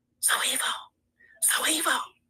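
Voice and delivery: slow, hushed, drawn-out whisper. Retelling a six a.m. phone call: imitating someone whispering. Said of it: "called my motherfucking phone at six in the morning whispering".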